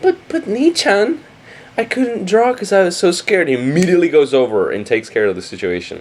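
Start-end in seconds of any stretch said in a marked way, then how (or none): 0.0-3.5 sugary, high, cutesy pleading voice. Retelling how the sister begs him to go: imitating an obviously cute plea. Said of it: "puts on a super obviously cute face and says".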